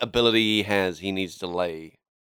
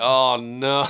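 ordinary talk, nothing marked

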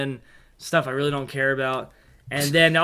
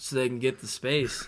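mock earnest, serious, very hushed, quiet tone; 3 semitones lower, 10 dB quieter than usual. Reenacting a movie chat with Honto: imitating Honto's serious tone. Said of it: "And in a serious tone".

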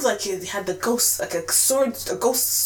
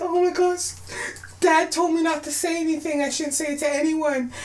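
mock crying, imitated, higher pitch; 8 semitones higher than usual. Recounting a favorite scene where a spoiled character speaks, imitating someone crying. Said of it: "she's crying".

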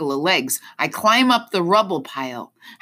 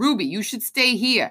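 firm, fast, no-nonsense voice; 4 semitones higher than usual. The narrator tells Ruby to stay behind, in a no-nonsense voice. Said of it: "I'm going for a no nonsense voice".

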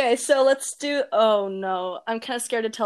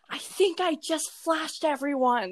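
pitched-up forced whisper pushed like a shout; 5 semitones higher, 4 dB quieter than usual. Retelling telling a friend in the water something urgent: imitating a whisper-yell. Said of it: "whisper yelled to her".

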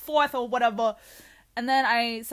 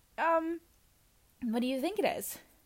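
play-acted light and playful, very slow and drawn out; 3 semitones higher, 5 dB quieter than usual. Recounting asking someone whether they cut their hair: retelling being light and playful. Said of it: "still being light and playful".

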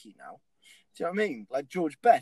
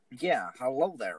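low, put-on American accent; 4 semitones lower than usual.

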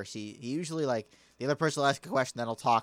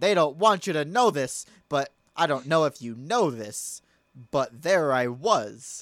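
quirky, odd inflection at the ends of sentences; 2 semitones higher, 6 dB louder than usual. Showing someone how a man with funny speech patterns talks, imitating weird sentence-end inflection. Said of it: "He'll use weird inflection".

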